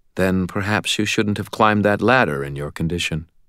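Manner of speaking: plain reading voice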